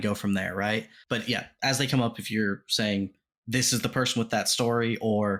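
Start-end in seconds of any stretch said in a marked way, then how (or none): none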